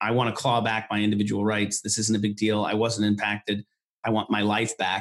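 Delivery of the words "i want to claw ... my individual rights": usual speaking voice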